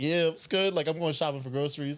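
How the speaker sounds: put-on nonchalant, breezy, confident casual tone. Showing how to go in there confidently: acting confident. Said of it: "you gotta go in there confidently".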